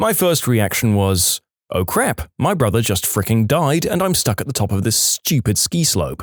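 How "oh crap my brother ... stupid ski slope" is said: ordinary delivery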